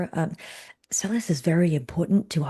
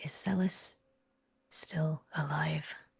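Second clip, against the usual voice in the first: voice dropped to a very quiet, hushed whisper; 9 dB quieter than usual. In a role-play scene, asking whether someone is still alive, whisper. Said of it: "I lower my voice to a whisper and I say".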